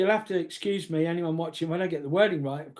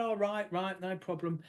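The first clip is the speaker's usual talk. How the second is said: put-on South East London accent, much quieter; 8 dB quieter than usual. Quoting a jovial man's answer when you came for the puja, in a South East London accent. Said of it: "delightful South London, South East London accent".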